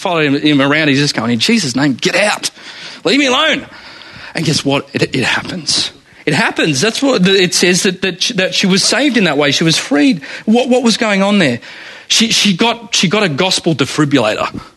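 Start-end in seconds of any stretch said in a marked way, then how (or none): 1.3-3.7 fed-up, exasperated, frustrated, with rising pitch. Imitating Paul's exasperated command to the spirit: imitating frustrated Paul. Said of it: "He's probably so frustrated with her".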